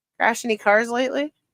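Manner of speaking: plain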